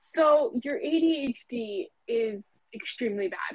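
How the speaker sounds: ordinary delivery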